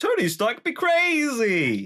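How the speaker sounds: very slow, high sing-song with "crazy" stretched out. Offering to do an impression of an actor: Jeff Bridges impression. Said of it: "you wanna hear my Jeff Bridges impression".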